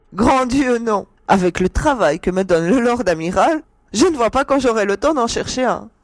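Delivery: laughing, very high and loud. A woman answers the Étrusien's teasing question, laughing. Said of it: "rétorqua-t-elle en riant".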